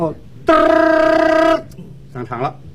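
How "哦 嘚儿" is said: imitated doorbell ring, slow, high trill. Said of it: "哦，摁电铃儿。".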